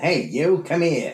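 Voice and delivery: put-on high little rat voice. Reading a list of eaten animals, the speaker offers their only one: rat voice. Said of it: "I don't have a rat voice other than".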